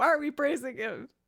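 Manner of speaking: put-on anger. Recalling how she gets mad at you guys at the end: mock-angry. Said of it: "at the end I get mad at you guys".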